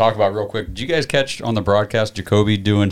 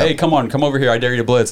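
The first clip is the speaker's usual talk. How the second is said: ordinary talk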